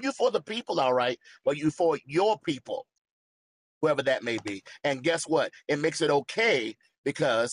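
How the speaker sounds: loud, fired-up preaching tone. A speaker preaching, catching himself mid-sentence: getting loud. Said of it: "I'm sorry, I'm getting loud".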